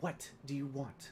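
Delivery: soft, hushed, kept-down voice. Zelina, standing well back in the house, speaks in a low, hushed voice. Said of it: "in a low, hushed voice".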